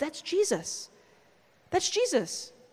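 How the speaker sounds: slow, soft, hushed whisper under the breath. Retelling leaning down to the kids during Mass: imitating a whisper. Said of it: "lean down and just whisper to my kids".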